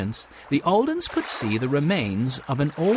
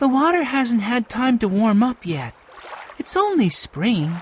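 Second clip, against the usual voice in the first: kind, gentle, slightly high voice; 8 semitones higher than usual. Narrator voicing Violet answering her brother Benny about the cold water: said gently. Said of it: "Violet said gently".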